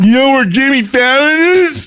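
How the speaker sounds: very high celebrity-style voice. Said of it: "here's where I'm gonna do my best [name]".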